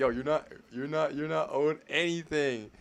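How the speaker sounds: mad, angry, heated, worked-up ranting. Mocking a guest's angry rant about entitlement: imitating an angry ranter. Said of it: "Look how mad he is".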